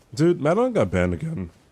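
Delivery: voice cracking. Streamer telling chat some news, voice cracking. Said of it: "Oh, voice crack".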